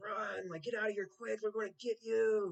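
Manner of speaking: put-on high, loud, threatening yell. Retelling a brother's phone messages telling the speaker to run: imitating brother yelling. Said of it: "yelling on the phone".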